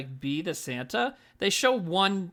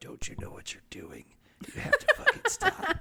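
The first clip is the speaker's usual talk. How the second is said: mock whispering, higher pitched; 14 semitones higher than usual. Acting out whispering to an obnoxious girl as a mall Santa: acting out a whisper. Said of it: "Just whispering to her".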